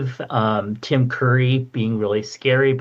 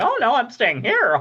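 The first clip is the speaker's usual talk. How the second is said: squeaky, very high little chicken voice; 11 semitones higher than usual. Retelling the chicken refusing to leave: imitating the chicken. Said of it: "the chicken's like".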